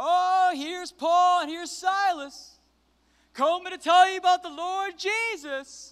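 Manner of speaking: mock, very high, loud, scoffing taunt. Retelling how a demon-possessed woman heckled Paul and Silas, retelling a mocking heckle. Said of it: "and she was mocking".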